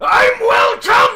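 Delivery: very loud, high, shocked, outraged shout.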